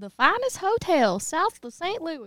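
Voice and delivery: put-on heavy country accent, slow, high drawl. Asked to repeat the phrase with a more country accent. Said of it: "Can you do that like with a more country accent?".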